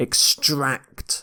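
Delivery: extract with the second syllable -tract stressed. Demonstrating word stress in an english pronunciation lesson: stress on extract. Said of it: "You stress the second syllable here".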